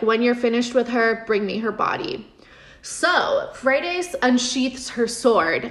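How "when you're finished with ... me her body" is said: ordinary talk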